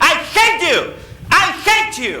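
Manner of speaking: high, loud angry shout. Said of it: "he ran out of the house shouting".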